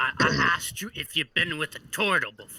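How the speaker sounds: put-on tipsy, drunk-sounding voice. Voicing an intoxicated character asking about a turtle: acting drunk. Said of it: "I'm a little intoxicated".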